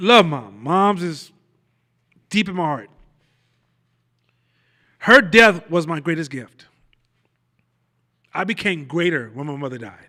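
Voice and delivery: choked-up voice catching in the throat. Talking about losing a mother years ago to cancer, choked up. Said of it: "I'm even still choked up now when I say it".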